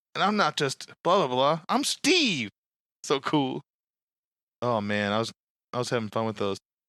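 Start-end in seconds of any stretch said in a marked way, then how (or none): 0.1-2.5 hammy, bad heroic voice with swooping, swinging pitch. Describing a video, the speaker does a shitty Captain America voice. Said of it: "this shitty Captain America voice being like".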